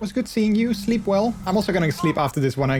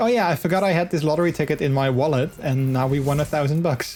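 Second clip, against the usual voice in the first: ordinary talk, nothing marked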